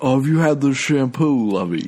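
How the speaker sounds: put-on upper-class lockjaw accent. Acting out yacht club drunk talk: Locust Valley Lockjaw accent. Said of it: "What was that name of that accent?".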